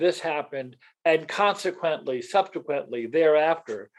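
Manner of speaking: normal talking voice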